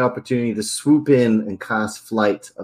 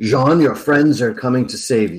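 gruff, comforting, soothing voice. Casting a message spell to a prisoner bound to a mast, Lord Talfrin's comforting gruff voice. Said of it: "in Lord Talfrin's probably quite comforting gruff voice".

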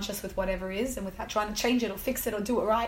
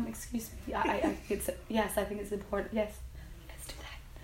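soft, hushed, gentle and insistent whisper; 6 dB quieter than usual. Voicing what the soul says, in a whisper. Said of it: "and it's in a whisper".

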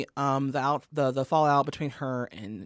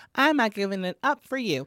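high, childlike put-on voice, sounds about twelve; 6 semitones higher, 4 dB louder than usual. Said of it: "why did you sound 12 when you did that?".

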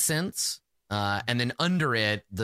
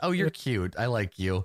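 spoken while laughing through the words. Voicing an assistant who laughs again at the visitor: laughing while speaking. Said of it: "she laughs again. She says".

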